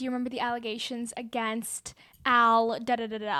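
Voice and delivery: ordinary talk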